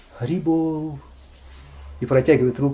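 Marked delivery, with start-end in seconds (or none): 0.2-1.0 soft, very meek, deeply humble pleading voice. Retelling a beggar in Vrindavan holding out his hand: mock-meek beggar's plea. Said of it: "говорит очень смиренно-смиренно".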